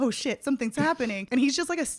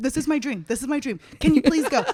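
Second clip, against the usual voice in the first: put-on frantic, freaking-out voice; 2 semitones higher, 4 dB louder than usual. Retelling a FaceTime call begging for a favor: imitating someone freaking out. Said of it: "he's, like, freaking out".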